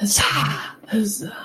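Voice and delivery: hushed, breathy, theatrical stage whisper meant to carry. Player retells using the key instead of kicking the door down, stage whisper. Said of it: "But like really quietly".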